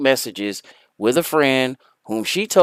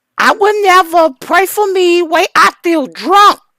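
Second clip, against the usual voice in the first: very high, loud, exaggerated fake Dominican accent; 6 dB louder than usual. Before describing a clip, trying out the fakest Dominican Republic accent. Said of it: "put on my fakest Dominican Republic accent".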